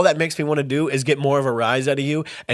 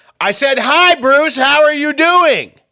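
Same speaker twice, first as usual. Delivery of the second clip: loud, high, drawn-out hollered yell; 12 semitones higher, 7 dB louder than usual. Retelling what a dad said at an event: imitating dad yelling loudly. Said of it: "he loudly yells".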